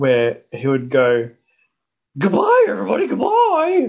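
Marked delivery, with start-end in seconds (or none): 2.2-3.9 goofy, very high, swooping sing-song voice. Describing a friend's habit when leaving places, the speaker does his silly put-on voice. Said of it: "putting on this silly voice".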